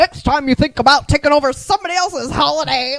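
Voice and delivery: mock pissed-off, stern, angry scolding tone. Retelling Santa's line from the end of the movie: imitating an angry Santa. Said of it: "he gets all pissed".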